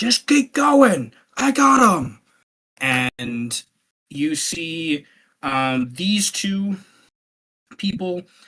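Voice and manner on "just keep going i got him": very high, loud shouted yell. Voicing a fighter yelling to another guy in combat: yelling out. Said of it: "one initiative to yell out towards that guy".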